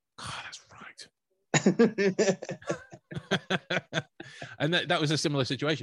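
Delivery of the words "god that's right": high, slow, smug laughing whisper. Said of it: "he turns to the camera and goes".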